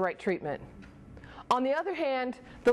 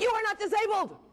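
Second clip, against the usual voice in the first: mock very high, exasperated, frustrated shout; 9 semitones higher than usual. An advocate mom retelling finally yelling at him: retelling a yell. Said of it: "finally I started yelling".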